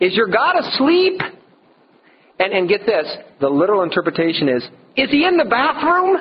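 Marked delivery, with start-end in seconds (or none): 0.0-1.2 mock very high jeering, mocking taunting tone. Retelling a Bible story, the speaker acts out a taunt at the pagan worshippers, mock taunting. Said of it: "Elijah's over there taunting them".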